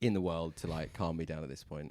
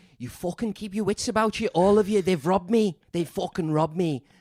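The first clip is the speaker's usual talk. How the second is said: loud, very high-pitched put-on Liverpool Scouse accent; 14 semitones higher, 13 dB louder than usual. Retelling what an angry hotel guest told the queue: imitating a Scouse accent. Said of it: "and he's Scouse".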